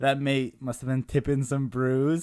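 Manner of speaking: wobbly, high, bad put-on Australian accent. Reading out a listener's reply aloud, put-on australian accent. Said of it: "what accent was that?".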